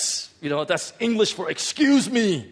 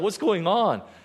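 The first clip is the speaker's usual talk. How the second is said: acted startled reaction; 2 semitones higher than usual. Retelling a woman screaming behind you, acting out being startled. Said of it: "And I was startled".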